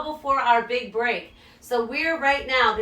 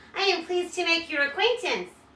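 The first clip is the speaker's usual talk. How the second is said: thin doll's voice, very high; 6 semitones higher, 4 dB quieter than usual. Reading a story, voice a woman greeting a newcomer in a very high, thin voice. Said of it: "she said in a very high, thin voice".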